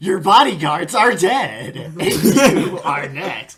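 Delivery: loud, put-on, oddly sarcastic tone. Describing a game's main character answering a merchant, the speaker gives a mock-sarcastic weird retort. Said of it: "in a weird, sarcastic line".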